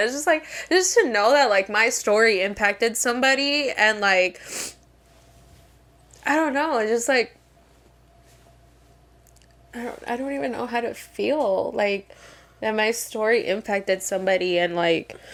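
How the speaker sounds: emotional, choked up, on the verge of crying. Talking about how a shared story impacted someone, near tears. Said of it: "I'm about to start crying again".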